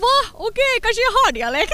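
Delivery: very high, startled surprise.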